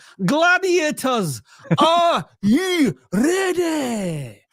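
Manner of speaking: put-on very high, very slow, drawn-out Scottish accent. Retelling a game show referee's call: imitating a Scottish referee. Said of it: "there was a Scottish referee".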